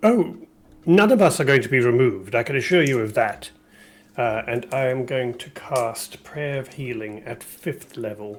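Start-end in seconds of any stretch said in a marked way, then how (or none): 0.0-3.5 loud, quick, projecting orator-style voice. Player voices his character answering a creature, in a loud public speaking voice. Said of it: "in his best public speaking voice".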